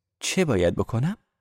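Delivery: ordinary delivery, nothing marked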